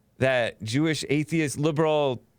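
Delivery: ordinary talk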